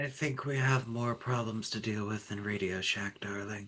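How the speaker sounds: hushed whispered aside. In the scene, leaning over to Velma to say this, whispering. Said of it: "She's gonna whisper this".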